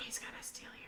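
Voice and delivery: whispering softly. A player at the table warns another: whispering softly. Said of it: "Kennedy just whispered softly".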